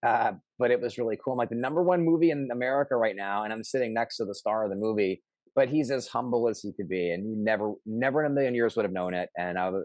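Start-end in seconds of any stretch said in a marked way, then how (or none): none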